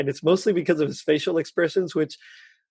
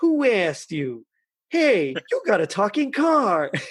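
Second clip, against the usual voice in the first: animated, high, swooping put-on character voice; 5 semitones higher than usual. Retelling how Tino snapped back at Kit, in a Tino impression. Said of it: "try my best to, to do his voice".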